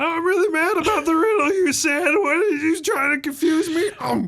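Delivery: very high-pitched, dim fantasy monster voice. Game master doing the manticore's voice one more time: Manny the Manticore voice. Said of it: "You can do it one more time".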